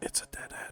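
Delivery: quiet whispering. Hitting a dead end, the player whispers the news to Tobias. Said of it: "I'm just gonna whisper to Tobias".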